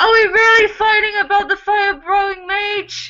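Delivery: very high-pitched, muffled voice. Voicing a character trapped inside a creature's throat: Theo's muffled voice. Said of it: "you can hear Theo's muffled voice from inside this creature's throat".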